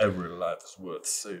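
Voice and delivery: deep, soft, very low, hushed put-on southern-tinged voice. You are still trying to dial the voice in while others judge it, put-on voice getting southern. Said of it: "Still getting southern".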